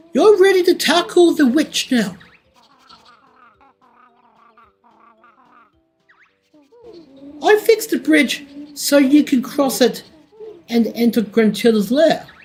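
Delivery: high-pitched mole character voice. Reading the game's lines aloud as Bottles: Bottles mole voice. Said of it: "I do a great mole voice".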